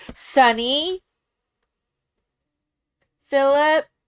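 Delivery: full-throated, very loud yelling. Scolding cats that are fighting, yelling at pets. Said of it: "Sorry for yelling".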